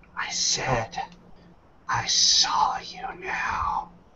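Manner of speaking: whispered, rasping creature hiss. A creature staring down at a paralyzed woman speaks: raspy hissing voice. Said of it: "its raspy voice hisses out".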